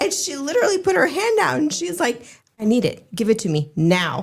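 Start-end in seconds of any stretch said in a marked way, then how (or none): 2.6-4.2 put-on, completely serious, no-nonsense dead-serious tone. Retelling how a woman held her hand out and demanded it, imitating a dead-serious demand. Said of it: "she was just that serious too".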